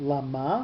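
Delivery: Lama with the stress on second syllable -ma. Going through words from a page together: stress on second syllable of Lama. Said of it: "with the accent on the second syllable".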